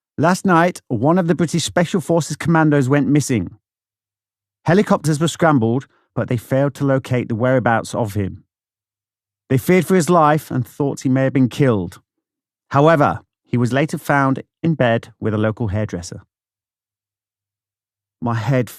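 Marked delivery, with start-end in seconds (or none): none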